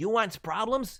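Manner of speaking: put-on high, loud Mexican accent, wrestling-ring style. Voicing Claw Lo, a teen knight from Acorn Kingdom, in a Rey Mysterio-style Mexican accent. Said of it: "Mexican accent".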